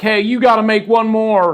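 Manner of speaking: rowdy, hard-sell cowboy salesman pitch. Imitating an author's rowdy cowboy sales style: imitating Ed Mylett, rowdy cowboy salesman. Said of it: "that's my imitation of Ed".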